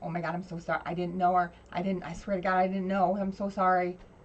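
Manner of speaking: put-on half-crying voice. Retelling how he apologized on his knees when confronted: imitating someone half crying. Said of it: "half crying".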